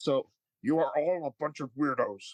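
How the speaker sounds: stiff, uptight delivery. Recalling a favorite Muppet Show bit: Sam the Eagle voice. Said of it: "That's Frank Oz doing that voice".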